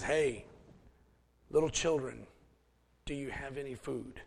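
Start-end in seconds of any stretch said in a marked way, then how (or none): none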